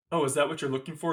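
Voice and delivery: ordinary delivery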